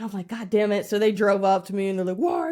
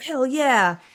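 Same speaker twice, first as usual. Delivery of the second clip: mock excited, triumphant victory cheering; 4 semitones higher than usual. Retelling taking over the gym in Pokemon Go: imitating her own cheer. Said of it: "I'm like".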